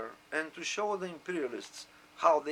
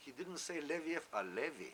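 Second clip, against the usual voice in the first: usual speaking voice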